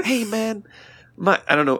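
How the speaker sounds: terrible put-on North Carolina accent. Voicing a dead wife's ghost setting up her husband, in a terrible north carolina accent. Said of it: "This is my terrible North Carolina accent".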